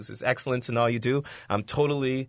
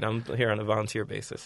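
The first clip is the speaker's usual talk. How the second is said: plain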